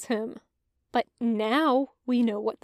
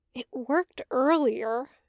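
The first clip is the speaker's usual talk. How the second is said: sheepish, embarrassed, abashed. A character at a keypad that blinks red, sheepish.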